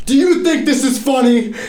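high, loud angry yell. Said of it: "she started yelling at me".

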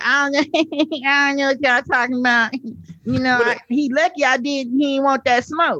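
very high, pitched-way-up woman's chatter. Imitating a woman who talks like Bad Baby: imitating her Bad Baby-like talk. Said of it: "she talks like Bad Baby. She's like".

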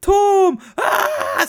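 mock piercing, shrill, very high shriek. Retelling a horror movie scene, a girl running through rooms: imitating someone screaming.

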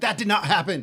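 mock screaming voice. Retelling reacting to a movie scene: imitating own screaming at the screen. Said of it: "I'm just screaming at the screen".

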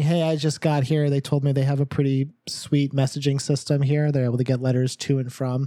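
normal talking voice

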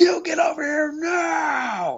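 play-acted commanding yell, very high, slow, drawn out on "now". Retelling how a mother yelled at a man after her child fell. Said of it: "my mom was like".

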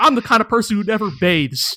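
plain

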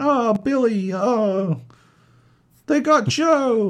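very high, very slow, drawn-out yell. Describing game characters calling out to each other: imitating game characters yelling. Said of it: "when they're yelling out".

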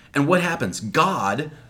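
plain

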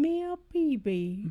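high regal voice with lisp. Suggesting ways to say a name, the speaker tries a lisping Queen impression. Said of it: "You could go Queen and be like".

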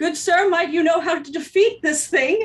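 loud acted character shout. Calling out in character to another player's character during combat: yelling out. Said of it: "I'm going to yell out".

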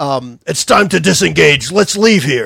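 rough, booming, loud and gruff voice. Game narrator voicing an unseen figure at the back of the ship, loud, gruff voice. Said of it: "a loud, gruff voice that says".

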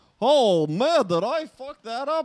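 slow, drawn-out, high-pitched played-dumb voice. Describing how a TV officer is played as dim: Bud voice. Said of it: "He's like, he has this, like".

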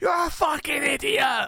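very high, shrill, all-out screaming. Retelling yelling at Matt when he asks which button shoots, re-enacting own screaming. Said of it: "I'm just absolutely screaming like".

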